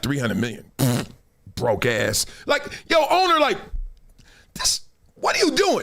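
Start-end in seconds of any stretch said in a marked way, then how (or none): 0.0-2.3 contemptuous, unimpressed, dismissive scoff. Acting out the owner's private thought about the player: imitating the owner's dismissive thought. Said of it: "in his head, he like".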